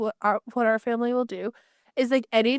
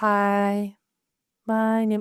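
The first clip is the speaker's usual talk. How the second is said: chill voice dropped lower, drawn-out hi; 3 semitones lower than usual. Mocking how the other person usually imitates her, imitating a dropped voice. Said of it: "usually you drop it even more".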